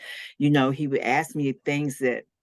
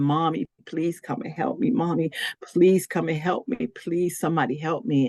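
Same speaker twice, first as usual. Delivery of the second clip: put-on restrained, mild, pleading cry; 3 semitones higher than usual. Retelling how she once screamed for help: retelling a scream for help. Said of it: "And I'm screaming".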